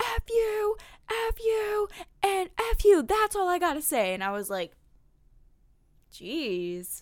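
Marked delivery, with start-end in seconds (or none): 0.0-4.1 very high, shrieked, screaming rant. Retelling how a man at a concert screamed at people bumping into everyone: imitating someone screaming. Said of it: "he was screaming at them".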